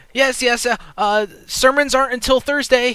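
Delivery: very high, loud, panicked woman's voice. Someone inside the closed church answers a visitor knocking hard, panicked voice. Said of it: "She sounds really panicked in her voice".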